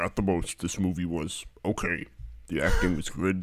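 disguised voice-changer voice. Reading a three-star review as the anonymous reviewer: disguised anonymous reviewer voice. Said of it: "also doing that voice".

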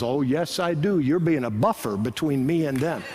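put-on Chicago accent. Retelling what a fan said at a ballgame: imitating a chicago accent. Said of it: "He had this classic Chicago accent".

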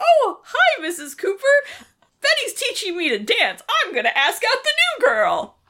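very high, breezy, sing-song, unfazed chirp. Retelling how Archie answers after being caught at the dance lesson: imitating Archie, unfazed. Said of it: "totally unfazed by the fact".

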